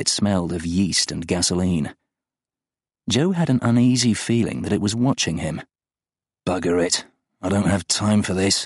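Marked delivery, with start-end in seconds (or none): 6.4-8.7 muttering, mumbled words. A man finds the road blocked, muttering. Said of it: "he muttered".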